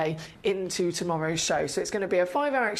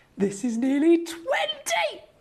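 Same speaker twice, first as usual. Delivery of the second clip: overexcited, very high, swooping excited exclamation; 11 semitones higher than usual. Announcing a turquoise stone's measurement to viewers: overexcited. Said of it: "Sorry, I'll calm down now".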